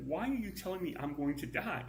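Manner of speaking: irritated, fed-up, really ticked-off tone. Telling a joke, voicing a man just warned by an angel: acting really ticked off. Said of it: "And he's real ticked".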